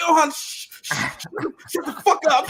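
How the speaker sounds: mock yelling full of shushing sounds. Retelling how others reacted to a remark: imitating someone yelling. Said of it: "they was yelling at Ilhan after that one".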